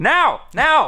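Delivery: high, loud yelling. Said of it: "the critic is yelling".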